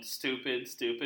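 ordinary delivery

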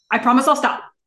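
curt, short put-on delivery. Recapping a TV scene, repeating the line in Felicity's clipped delivery. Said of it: "she's very clipped about it".

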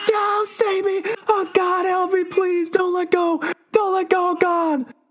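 very high, frantic, panicked pleading voice. Narrating a tabletop scene, voicing Angie as she is pulled by the arm, freaking out. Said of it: "Angie's just fucking freaking out".

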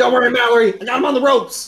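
very high, loud yell, sounding choked. A player voices their character calling out to Mallory while being choked, yelling. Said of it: "I yell".

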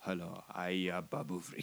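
dead serious, totally straight delivery. Retelling a movie scene, dead serious Babu Frick impression. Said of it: "totally se-, dead serious".

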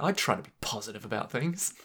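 soft, pointedly aggressive, insistent delivery. Teasing the other speaker about how they just said something, mocking an aggressive tone. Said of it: "You said that in a very aggressive way".

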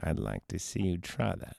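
sinister, creepy, taunting voice. Retelling a film scene, quoting the stranger: imitating the stranger's creepy voice. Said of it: "when you just hear his voice going like".

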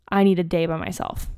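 usual speaking voice

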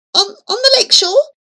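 stammering. Questioned about the jade by the stepfather, she answers, stammering. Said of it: "stammered she".

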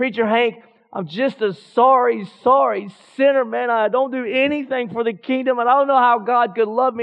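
play-acted broken, tearful, weeping voice. A preacher retells what a weeping woman told him, imitating someone weeping. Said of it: "she would be broken and just weeping".

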